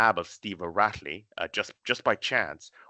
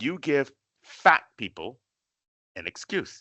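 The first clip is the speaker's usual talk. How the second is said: mock accusing tone, slow, word by word, swooping; 5 semitones higher than usual. Retelling what a professor said at dinner: imitating a professor's accusing line. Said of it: "he said it exactly like this".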